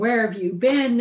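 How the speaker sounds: frantic, loud, beside-herself yelling. Retelling a story of a wife upset at her late husband: imitating someone yelling. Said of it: "yelling at him".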